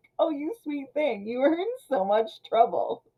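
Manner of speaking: high, genteel, sweetly super-pleasant manner. Retelling how a character speaks to a young man, in a mock super-pleasant tone. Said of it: "super pleasant as he's telling him".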